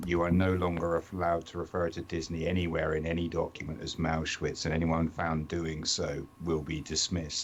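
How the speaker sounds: normal talking voice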